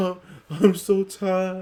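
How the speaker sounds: slow, fake sobbing lament. Mocking upset fans over a trade: mock crying like the Cowardly Lion. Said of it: "I'm crying like the cowardly lion".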